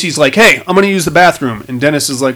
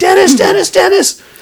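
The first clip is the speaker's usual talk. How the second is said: put-on frantic, freaking-out woman's voice, much higher; 3 dB louder than usual. Telling a story about a gas station, imitating Lacey freaking out. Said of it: "she freaks right out".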